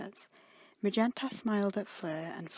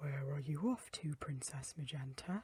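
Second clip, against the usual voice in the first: low, deep, hushed maid voice; 4 semitones lower, 8 dB quieter than usual. A narrator reads a maid's question to Princess Magenta, in a deep monotone voice. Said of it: "in a deep monotone voice".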